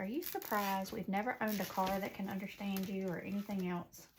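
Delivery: plain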